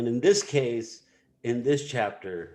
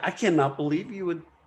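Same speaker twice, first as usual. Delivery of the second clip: mock-indignant, faster pace; 7 semitones higher than usual. Speaker acts out a psychological complex reacting to being distrusted, mock-indignant. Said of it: "It acts indignant".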